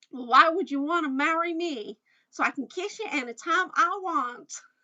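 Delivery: attempted Southern American accent. Trying out a phrase from Oklahoma for listeners, in an attempted American accent. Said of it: "I'm working on my American accent".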